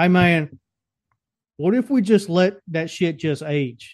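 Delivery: casual, put-on southern American accent. Speaker imagining the person who first invented cheese, in a southern accent. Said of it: "they always have a southern accent".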